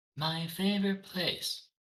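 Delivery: very faint, barely audible, high tiny voice. Voicing a little magic mouth near the floor, asked to speak up: very faint voice. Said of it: "It says very faintly".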